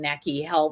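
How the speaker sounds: ordinary talk, nothing marked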